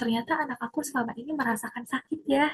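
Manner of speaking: quiet, hushed delivery.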